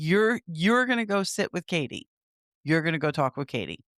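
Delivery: ordinary delivery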